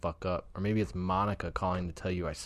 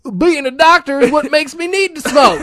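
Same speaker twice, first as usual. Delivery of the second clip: shrill, high, very loud ranting shout; 20 dB louder than usual. Answering a question about how a doctor can be smoking, do a Becker impression. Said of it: "that was my Becker impression".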